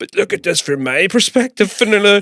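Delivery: acted, high, drunken, self-pitying whining plea. Retelling a blackout night, the speaker quotes his past self: imitating his drunk self. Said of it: "drunk as fuck".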